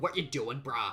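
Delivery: put-on failed Boston or New York accent. Trying to imitate the dad's accent, a bad new york or boston accent. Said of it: "Should I even try to imitate it?".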